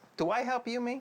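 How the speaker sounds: loud yelling, shouting. Confronting her about helping clean the car: yelling at her. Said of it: "'Cause you yelled at her for no reason".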